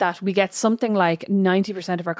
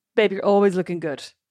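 mock sarcastic tone, faster. Retelling someone's reply about the speaker's hair, imitating a sarcastic compliment. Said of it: "he said it real sarcastically".

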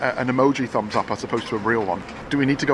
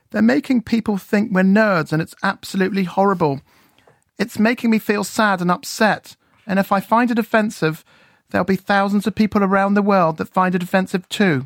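put-on childlike, pitched-up English accent, a bit panto; 7 semitones higher, 4 dB louder than usual. On the radio, reading out what Teddy said, imitating Teddy with a panto English accent. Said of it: "put on an English accent and, you know, go a bit panto".

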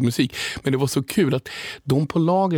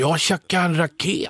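put-on Stockholm accent, pitched much higher; 4 semitones higher than usual. Speaker retells what dad said when he came home: imitating dad's Stockholm accent. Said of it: "han snackar stockholmska".

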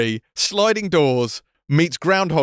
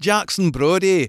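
stupid, exaggerated, over-the-top put-on Scottish accent. Quoting how a TV character says a detective's name, in a stupid Scottish accent. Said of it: "I did it in that stupid accent".

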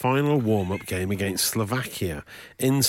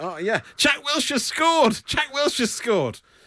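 stretched, high, drawn-out yelping voice. Retelling someone in a restaurant during dinner; imitating someone yelping. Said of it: "someone started yelping".

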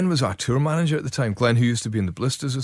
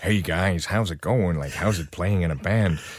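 put-on low, bland, generic everyday American accent; 6 semitones lower than usual. Recalling someone's baffling impersonation for the band, in a generic american accent. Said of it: "in a sort of generic American accent".

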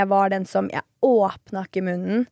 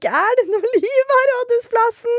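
very high stage shout, acted out; 4 dB louder than usual. Host recalls shouting from the stage at Rådhusplassen, retelling a shout from stage. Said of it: "sto på scenen og skreik".

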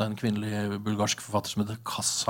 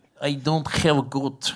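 slow, put-on broken English. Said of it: "sa han, eh, sekkepipemakeren".

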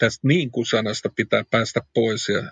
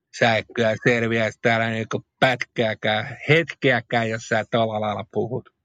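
badly faked Tampere dialect. Speaker quoting what Tampere listeners tell them, in a very bad Tampere dialect imitation. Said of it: "erittäin huonoa imitaatiota Tampereen kielestä".

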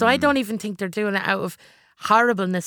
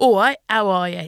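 put-on English accent, trying hard; 4 dB louder than usual. Speaker recalls imitating their english dad for a part, in their best english accent. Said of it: "my best English accent".

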